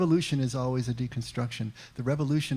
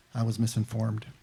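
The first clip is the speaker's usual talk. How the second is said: mock-deadpan delivery, lower pitch; 2 semitones lower than usual. Retelling a Casablanca scene, quoting Bogey's reply, imitating Bogey's deadpan. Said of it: "in his deadpan way".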